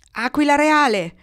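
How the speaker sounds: loud, high-pitched shouted call. As the boy calling out to the eagle Gorgo, shouting. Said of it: "gridò allora il ragazzo".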